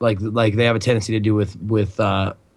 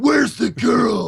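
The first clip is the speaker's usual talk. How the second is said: mock screaming, higher pitch; 12 semitones higher than usual. Joking about heroes searching for kidnap victims: imitating a hero screaming. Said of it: "it's like".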